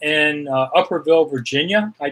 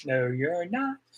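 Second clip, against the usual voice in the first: normal talking voice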